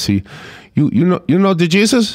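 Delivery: put-on English with Spanish accent. Retelling what a young evangelical handing out things asked them, in a spanish accent. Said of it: "had a Spanish accent".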